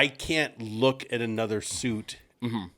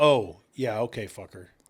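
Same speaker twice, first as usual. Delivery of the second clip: slow, sullen, snippy delivery with attitude. Retelling how the other speaker answered the late call: imitating someone with an attitude. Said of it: "you said it with an attitude".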